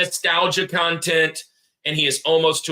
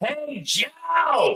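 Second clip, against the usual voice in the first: high-pitched calling out. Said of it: "the lady leans back and goes".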